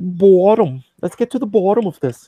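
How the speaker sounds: put-on loud, odd Canadian accent. Showing others how Canadian he sounds, do a Jordan Peterson impression. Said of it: "He's like".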